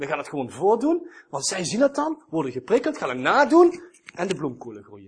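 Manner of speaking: sardonic, sarcastic, swooping sing-song delivery. Speaker explaining the fertility logic of that era, fairly sarcastic. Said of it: "Ik zeg het nu even op een vrij sarcastische manier".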